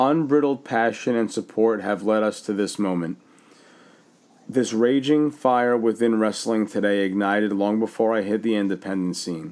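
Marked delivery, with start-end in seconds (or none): none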